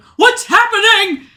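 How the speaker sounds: shrill, very loud, high-pitched full-volume shout. Voicing a character in chaos trying to calm everyone, yelling. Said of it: "he starts, like, yelling".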